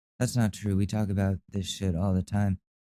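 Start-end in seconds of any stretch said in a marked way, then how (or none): none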